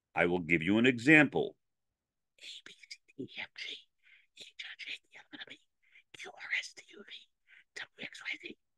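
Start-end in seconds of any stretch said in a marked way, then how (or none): 2.4-8.6 soft hushed whisper, very quiet throughout. Demonstrating a pre-podcast alphabet exercise, whispering. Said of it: "I did that in a whisper".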